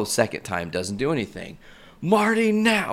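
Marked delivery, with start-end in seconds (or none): 2.0-2.9 mock scream, much higher. Retelling a man hiding on camera calling to Marty, imitating someone screaming. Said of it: "And he's screaming".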